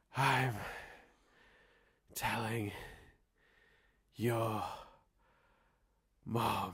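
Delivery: soft, breathy, word-by-word delivery. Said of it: "and he goes".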